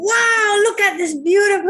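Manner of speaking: high-pitched, thrilled, enthusiastic exclaiming. Giving feedback on someone's tone of voice, showing the alternative: excited tone. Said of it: "make it so exciting".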